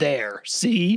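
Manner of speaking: mock, loud, angry, dead-serious deadpan. Describing a cheated magician's act, the speaker imitates him: mock-angry deadpan. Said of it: "in a really angry deadpan voice".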